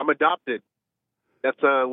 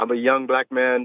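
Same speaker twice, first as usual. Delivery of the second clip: ordinary delivery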